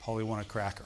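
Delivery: plain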